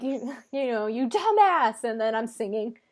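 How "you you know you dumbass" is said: small, held-back screaming outburst. Retelling screaming at other drivers while driving: imitating own screaming. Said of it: "I'd be screaming like".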